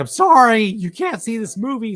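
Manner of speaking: squeaky, very high, voice-cracking nerd voice. Retelling being stopped from seeing a movie: imitating a crackly voice. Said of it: "some crackly voiced nerd who's like".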